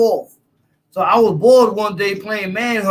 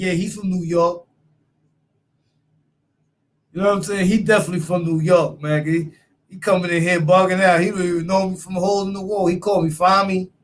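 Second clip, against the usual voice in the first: ordinary delivery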